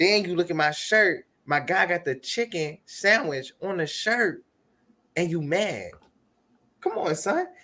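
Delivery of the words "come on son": put-on New York accent, very high-pitched. Addressing someone who looked at his shirt, in a New York accent. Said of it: "now I got to bring the New York accent out".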